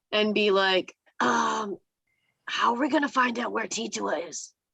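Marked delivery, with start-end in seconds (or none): 1.2-4.4 loud stage whisper. A player in a role-play asks the group something, in a stage whisper. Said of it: "I'm gonna like whisper, but like the stage whisper".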